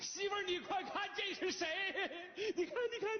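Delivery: overeager, high-pitched, laughing, gushing fake delight.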